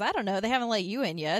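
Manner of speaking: plain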